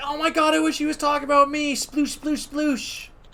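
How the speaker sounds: very high, gushing, freaking-out fan voice. Retelling a streamer fangirling over a romantic scene: imitating someone freaking out. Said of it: "freaking out".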